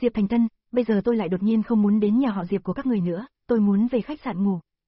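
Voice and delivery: ordinary talk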